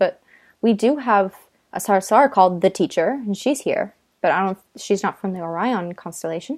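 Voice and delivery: ordinary talk, nothing marked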